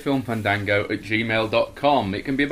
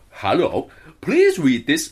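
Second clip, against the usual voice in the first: loud, lilting, sing-song put-on Swedish accent; 4 semitones higher, 5 dB louder than usual. Reading a letter aloud in the accent the other speaker picked: Swedish accent.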